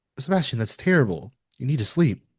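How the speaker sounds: usual speaking voice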